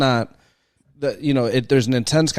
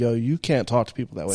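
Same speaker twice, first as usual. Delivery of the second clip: ordinary delivery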